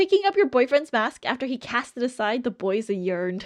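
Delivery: ordinary talk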